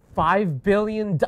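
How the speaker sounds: very loud, high, shrill shouting outburst. Reacting to hearing how far under someone was: shouting. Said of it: "excuse me for shouting".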